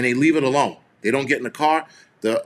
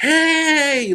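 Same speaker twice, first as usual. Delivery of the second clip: acted shrill, piercing, very high, stretched-out yell; 14 semitones higher than usual. Retelling how a young cop yelled at them, a loud high-pitched yell. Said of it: "Like really loud, high pitch".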